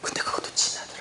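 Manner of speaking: fast, hushed, quick whisper.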